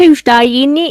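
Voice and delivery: put-on Cockney accent. Saying a stock phrase to the group: cockney accent. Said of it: "that's Cockney accent".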